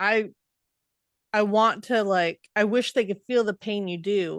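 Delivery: plain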